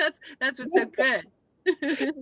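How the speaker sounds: loud, high-pitched laughing.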